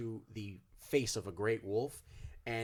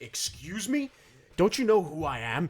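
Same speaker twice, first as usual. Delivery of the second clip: very loud, booming, drawn-out guard voice; 7 semitones higher, 10 dB louder than usual. Game master voicing a guard stopping a player at the door, guard voice. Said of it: "And he grabs your arm. / one of the guard goes".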